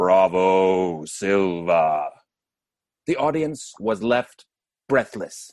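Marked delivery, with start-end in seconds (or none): 0.0-2.1 deep booming cheer, "bravo" drawn out. Speaker retells a church cantor calling out from the gallery, booming an octave lower. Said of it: "a whole octave lower, like this".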